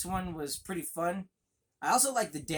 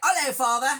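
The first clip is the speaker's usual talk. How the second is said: put-on, stagey British accent, high and very loud; 9 semitones higher, 10 dB louder than usual. Joking about a movie's child characters, imitating them with a British accent. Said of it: "without a British accent".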